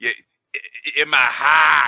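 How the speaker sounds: put-on Boston accent. Discussing a shot scene with friends, doing a boston accent. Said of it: "that Boston accent where it's like".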